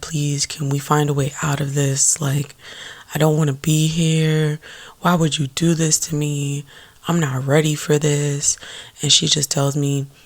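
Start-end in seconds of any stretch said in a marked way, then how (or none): 0.0-8.6 mock pleading, desperate, frantic and begging. Recounting a moment of begging her, acting it out: imitating begging. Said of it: "So I'm like begging her".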